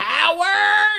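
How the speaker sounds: sing-song voice, high and loud.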